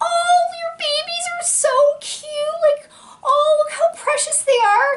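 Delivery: put-on gushing, giggly cooing, very high-pitched. Retelling two girls cooing over the babies: imitating women laughing and giggling. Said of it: "Like, laughing and giggling".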